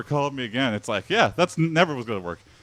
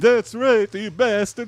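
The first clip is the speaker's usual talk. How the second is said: put-on very high, loud, odd Norwegian accent; 10 semitones higher, 5 dB louder than usual. Yelling at an attacker in a weird attempted Norwegian accent. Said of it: "that is my attempt at, I don't know, weird uh, Norwegian".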